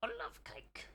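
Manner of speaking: hushed, airy, breathy whisper. Showing an impression of Rafe: Rafe impression. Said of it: "this is my Rafe impression".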